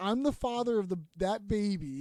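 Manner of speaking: plain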